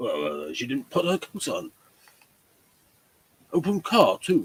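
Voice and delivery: animated character voice with swooping, swinging pitch. Acting out a scene between characters, in a Watson voice. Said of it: "I'm trying to do Watson".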